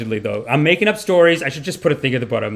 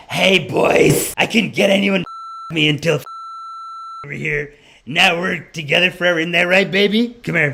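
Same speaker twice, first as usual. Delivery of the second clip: put-on smoker's voice, much higher pitch; 2 semitones higher than usual. Telling a story about an older woman who comes in, imitating her cigarette-y voice. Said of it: "she has the most cigarette-y voice".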